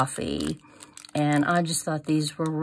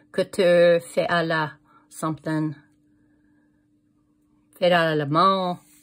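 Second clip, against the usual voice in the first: showy, fancy put-on French accent; 4 dB louder than usual. A crafter reading french sayings printed on a ribbon, in a fancy french accent. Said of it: "me and my fancy French accent".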